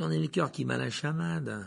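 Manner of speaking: ordinary delivery, nothing marked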